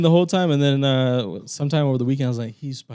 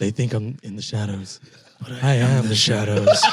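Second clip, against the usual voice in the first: low, dark, brooding voice; 4 semitones lower than usual. Asked to use his best Batman voice for an album intro, Batman voice. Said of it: "in your best Batman voice".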